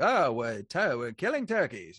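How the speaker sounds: loud, swooping 1940s newsreel announcer voice. Describing his video's voiceover, the speaker shows how he did it: 1940s newsreel announcer voice. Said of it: "I just did like that kind of a voice".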